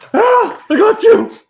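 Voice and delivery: very loud, very high, shrill scream. Brought back to life, a character jumps up screaming at his healer. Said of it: "As he jumps up screaming".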